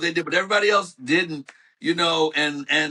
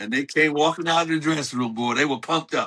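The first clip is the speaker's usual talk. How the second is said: ordinary talk, nothing marked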